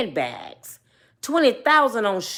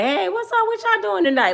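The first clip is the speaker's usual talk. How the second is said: very high-pitched, put-on breezy, casual nonchalance; 10 semitones higher than usual. Retelling walking back in to greet everyone, acting casual, put-on nonchalance. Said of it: "Like it ain't nothing".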